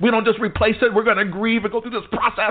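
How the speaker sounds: mock yelling.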